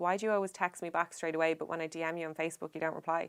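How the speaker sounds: ordinary delivery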